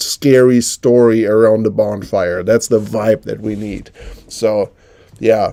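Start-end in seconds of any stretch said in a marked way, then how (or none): none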